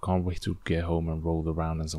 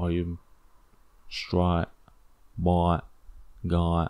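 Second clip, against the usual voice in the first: attempted put-on Australian accent. Voicing a question someone might ask him, in an australian accent. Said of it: "that was my Australian accent".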